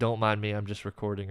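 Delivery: plain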